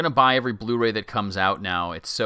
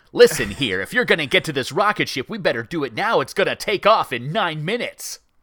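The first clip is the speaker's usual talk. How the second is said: brash put-on American accent, loud and high; 7 semitones higher, 6 dB louder than usual. Reviewing a show's acting and defending a character by doing him: brash American accent. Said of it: "You don't like his American accent?".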